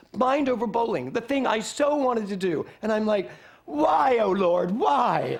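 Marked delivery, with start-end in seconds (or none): 3.7-5.4 very slow, loud, drawn-out theatrical lament. Retelling own reaction to missing bowling: mock dramatic lament. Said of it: "it wasn't that dramatic".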